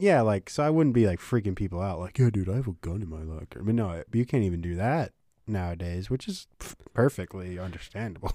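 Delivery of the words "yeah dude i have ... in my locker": joking put-on tough-guy gangster voice. Retelling own school hallway joke: imitating own mobster voice. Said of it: "in a mobster voice".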